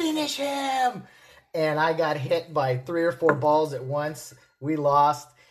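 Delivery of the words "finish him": play-acted, very high, all-out, full-throated scream. Telling how a guy shouted during a ball game, retelling a top-of-lungs shout. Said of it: "he shouts at the top of his lungs".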